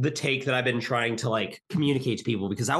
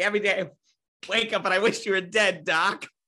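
attempted put-on cartoon rabbit voice; 7 semitones higher than usual. Joking about casting pairs, attempting a Bugs Bunny voice. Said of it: "I wish I could do a Bugs Bunny, a Bugs Bunny voice".

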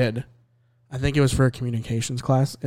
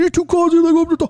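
loud, high-pitched play-by-play broadcaster call; 5 dB louder than usual. Retelling a commentary bit done in a John Madden voice. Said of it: "I did a, a John Madden voice".

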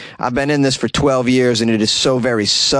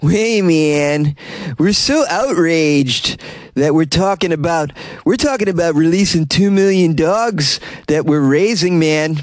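put-on stoner voice, pitched higher; 5 semitones higher than usual. Reading a quote from the dog meat farmers' head: imitating Zhu Young Bong as a stoner. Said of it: "who probably talks like a stoner".

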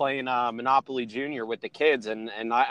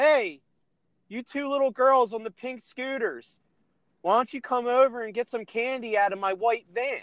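put-on kid's voice, yelling high and far; 10 semitones higher than usual. Retelling a young boy calling over to the speaker's kids: imitating a kid yelling. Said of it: "he's yelling to".

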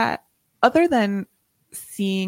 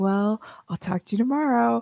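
mock, exaggerated super-charming tone; 5 semitones higher than usual. Recapping a scene where Dash tries to charm her; imitating Dash being super charming. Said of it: "Dash is like trying to be like super charming".

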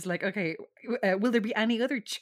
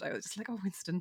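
ordinary talk

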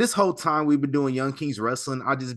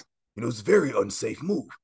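acted gravelly voice; 2 semitones lower than usual. Imitating a wrestling YouTuber's comments: Stevie Richards's raspy voice. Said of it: "Stevie got the raspy voice".

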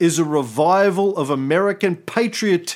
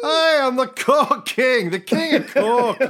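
put-on Scottish accent, pitched up; 8 semitones higher than usual. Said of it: "he used to just do that accent".

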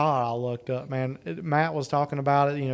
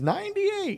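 put-on comedian scream, much higher pitch. Recalling a saying from watching a comedian's act, Katt Williams screaming impression. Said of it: "he sits there and he screams".

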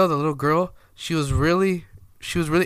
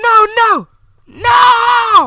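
put-on yelling no, much higher, louder; 11 dB louder than usual. Retelling how a woman yelled at the speaker over the baby, retelling her yelling no. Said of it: "She's like yelling at me".

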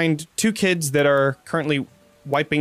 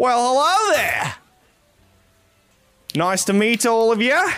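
put-on very high-pitched Australian accent; 9 semitones higher, 3 dB louder than usual. Storyteller voicing a man greeting the group at the door; australian accent.

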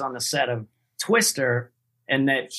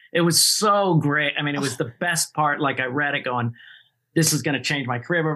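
usual speaking voice

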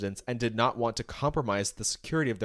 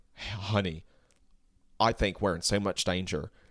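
low, put-on Southern drawl with stretched vowels; 4 semitones lower than usual. Acting out a man in a cab speaking to his companion, in a put-on Western accent. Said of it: "That's a Western".

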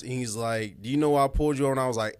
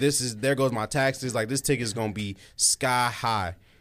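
normal talking voice

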